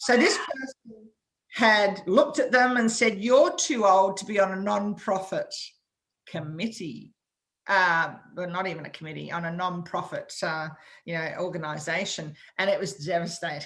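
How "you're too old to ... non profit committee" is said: ordinary delivery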